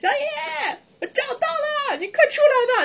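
acted, very high, loud holler. Retelling how 老廖 called up from the lawn: imitating 老廖 shouting loudly. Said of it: "老廖说话那么大声儿".

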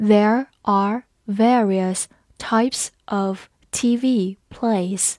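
slow, measured, deliberate reading. Teacher asks students to follow along: slow reading. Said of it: "跟着我慢读一遍".

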